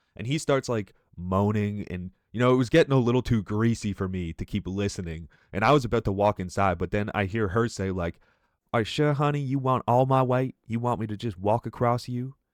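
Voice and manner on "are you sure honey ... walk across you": put-on Southern woman's accent, American South. Retelling an overheard conversation, doing the woman's voice: imitating a Southern woman. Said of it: "she was a thick Southern lady".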